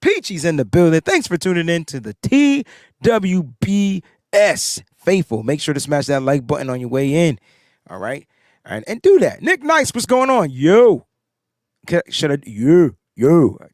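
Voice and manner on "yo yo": loud, called-out yo, boxer-style, Philly style. Trying out a Rocky impression before heading to Philly: Rocky voice. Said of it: "I'm trying to do in my Rocky".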